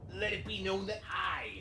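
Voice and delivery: very high put-on pirate captain voice, proclaiming. Reading a ship captain's log entry aloud in a pirate voice. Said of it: "I get to do my pirate voice again".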